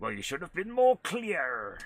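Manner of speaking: put-on rustic farmer accent. Voicing a game character answering the gatekeeper: farmer accent. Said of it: "Why have they both got farmer accents now?".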